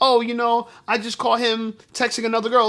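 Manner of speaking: put-on nonchalant tone. Imitating a woman mentioning a cheating boyfriend: imitating a nonchalant remark. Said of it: "so nonchalantly".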